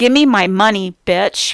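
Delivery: threatening, menacing growl of a man snapping. Retelling what Dale said to him on the couch, mock growling. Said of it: "he growls".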